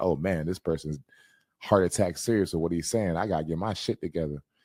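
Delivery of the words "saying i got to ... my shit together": normal talking voice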